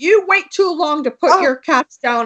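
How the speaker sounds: mock high-pitched screaming outburst, full force. Retelling a vet screaming at them about their sick cat: imitating a vet screaming. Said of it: "he started screaming at me".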